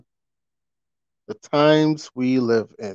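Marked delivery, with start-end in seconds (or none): 1.3-2.9 slow, weighty delivery leaning on "times".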